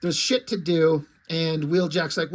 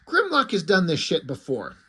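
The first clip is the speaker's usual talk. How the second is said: ordinary talk, nothing marked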